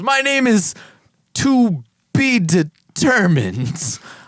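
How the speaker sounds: booming, very slow, drawn-out voice with swooping pitch. Retelling how a character introduced himself: All Might voice. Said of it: "full All Might voice".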